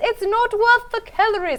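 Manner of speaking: put-on very high, stodgy little old lady, British. Quoting what Prue says when a bake is not up to par: Prue's stodgy old-lady British voice. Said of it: "like a stodgy little old lady British voice".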